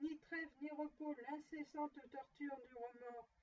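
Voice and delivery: ordinary delivery, nothing marked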